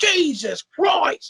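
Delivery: very high, best-effort put-on English accent. Imagining flying to the UK to find El Nigma: best British accent attempt. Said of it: "I would say it in the best English British accent I possibly could".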